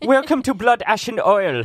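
put-on high showy German accent. Host recalls opening the show's intro in a german accent: german accent. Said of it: "coming in with the German accent".

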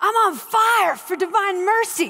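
put-on thick New York Bronx accent. Retell Frank's conversation with the sisters, speaking his part in Frank's thick Bronx accent. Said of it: "he's got this thick Bronx accent. I'm going to attempt it".

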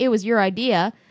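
ordinary delivery

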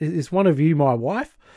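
plain

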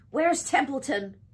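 loud, urgent, demanding tone. Wilbur must act quickly as the Arables and Zuckermans approach; demanding. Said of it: "he demanded".

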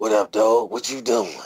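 put-on voice of a forty-five-year-old man. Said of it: "Sound like a forty-five-year-old man".

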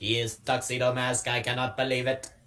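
low, level, monotone robot-style voice. Speaker retells the scene where Tuxedo Mask unveils himself, Sailor Moon in robot voice. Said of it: "in a robot voice".

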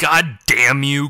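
growled out like a snarl. Yuki answers the voice that called them useless, growled. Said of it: "growled Yuki".

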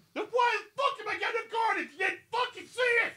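very high, shrill, angry protesting yell. Retelling a player yelling at the ref while walking off: imitating Sam yelling.

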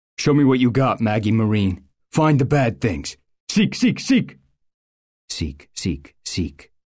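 firm, authoritative, commanding alpha voice. A dog handler sends his dog to find the bad things, in his firm alpha voice. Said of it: "Corporal [name] was her handler. ... and his voice changed from squeaky to firm".

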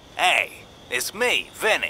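tough, hardened hoodlum voice. A caller in a game introduces himself on the phone, sounding like a hardened criminal. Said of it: "They always sound like hardened criminals".

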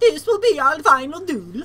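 put-on Swedish accent. Showing another player how the duel line should go, in a Swedish accent. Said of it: "more like a Swedish".

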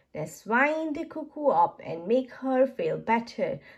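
ordinary delivery

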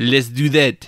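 clumsy, bad, fake French accent. Joking about a newer band that may be French: bad French accent. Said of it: "that's a bad French accent".

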